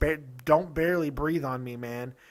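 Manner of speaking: ordinary talk, nothing marked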